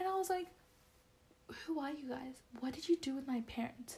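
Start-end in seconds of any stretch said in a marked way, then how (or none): none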